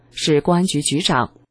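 ordinary delivery

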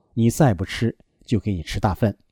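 ordinary delivery

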